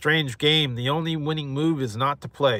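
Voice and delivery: ordinary talk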